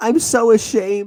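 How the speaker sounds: put-on crying voice. Retelling Carmela's confession from the show: mock crying as Carmela. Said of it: "I was doing her crying".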